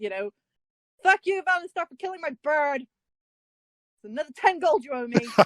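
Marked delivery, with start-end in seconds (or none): 1.0-5.3 pitched-up in-character shout. Shouting after someone in character about a killed bird: shouting in character. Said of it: "I'm just gonna shout".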